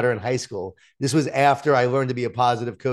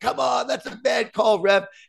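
acted-out yelling, pitched very high; 10 semitones higher than usual. Father recalling yelling at the refs over bad calls at her games, retelling yelling at refs. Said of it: "I'm yelling at the refs".

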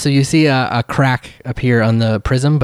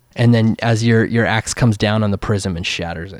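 usual speaking voice

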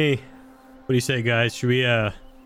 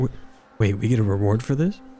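speaking in a whisper. Playing a character leaning over to a companion: whispering. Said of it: "I kinda whisper over to Drell".

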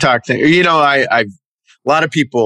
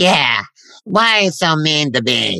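put-on rude dog voice, higher pitch; 3 semitones higher than usual. Voicing the rude pet dog answering back: rude voice of the dog Sophie. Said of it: "a really kind of rude personality to Sophie".

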